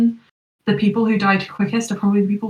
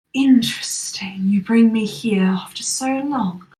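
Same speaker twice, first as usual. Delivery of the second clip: slow, deliberate, drawn-out voice. Voicing a sword that speaks to a player: voice of the sword. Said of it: "hear the voice of just the sword".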